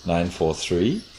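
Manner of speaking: upward pitch rise at the end. Explaining the conditions of a number experiment, the speaker demonstrates rising intonation at the end. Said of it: "rising intonation at the end".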